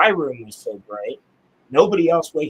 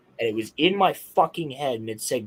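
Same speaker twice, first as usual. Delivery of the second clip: normal talking voice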